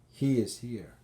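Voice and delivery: ordinary talk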